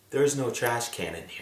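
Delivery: very quiet, low, hushed half-whisper. Retelling what the person in the stall half-whispered through the crack, half-whispering. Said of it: "He whispers through the crack".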